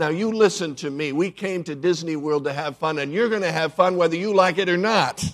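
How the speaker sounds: put-on firm, stern, scolding mother voice. Retelling a mother speaking to her son at disney world, imitating a stern voice. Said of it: "in a stern voice".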